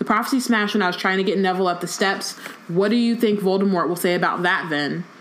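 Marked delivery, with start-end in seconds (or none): none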